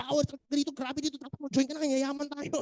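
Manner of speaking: high, hyped-up, nonstop overexcited sales-pitch delivery.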